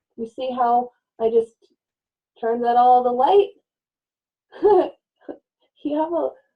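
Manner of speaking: talking through bubbling giggles. Speaker addressing listeners, then apologizing for giggling: giggling. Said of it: "sorry, I'm giggling".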